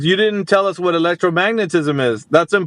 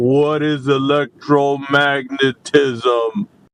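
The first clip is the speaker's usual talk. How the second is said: deliberately slow, condescending mock speech, word by word; 4 semitones lower than usual. Repeating a question after calling the other speaker slow: mock slow speech. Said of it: "So I can talk slow".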